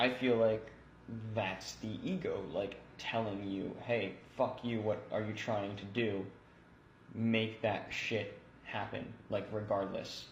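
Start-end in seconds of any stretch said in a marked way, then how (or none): none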